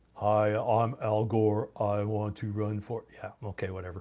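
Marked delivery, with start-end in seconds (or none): 0.2-3.1 very slow, flat, dull, level, drawn-out drawl. Reading a chat message about boring voices, then doing Al Gore impression. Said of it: "Go listen to Al Gore sometimes".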